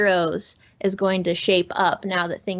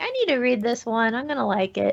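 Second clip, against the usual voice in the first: plain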